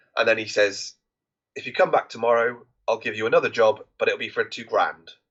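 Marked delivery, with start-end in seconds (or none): none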